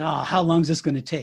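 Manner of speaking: put-on huffy, impatient man's voice. Retelling a store line story, imitating a huffy man. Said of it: "he's all huffy and huffy".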